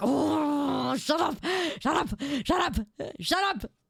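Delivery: mock exasperated, annoyed tone, drawn-out "oh". Retelling an annoyed reply to a repetitive talker: retelling own annoyed reply. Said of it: "And I'm like".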